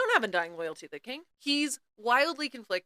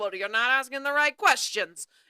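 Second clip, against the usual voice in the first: put-on crotchety voice; 3 semitones higher, 4 dB louder than usual. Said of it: "this crotchety dude who's like".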